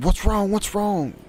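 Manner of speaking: screamed, very high-pitched. Retelling how the neighbor ran to the fence: imitating the neighbor screaming. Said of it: "she made it from her porch to the fence screaming".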